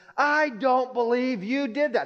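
high, laughing shout.

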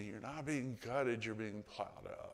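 soft, hushed, secretive half-whisper. Retelling the words heard in hard times: retelling a half-whisper. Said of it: "I remember Jesus whispering to me".

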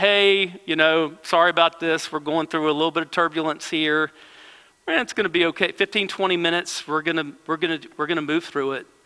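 easygoing, nonchalant, casual airline pilot announcement voice. Retelling a captain's announcement during bad turbulence: imitating a nonchalant captain. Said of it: "The voice of the captain comes on and just nonchalant".

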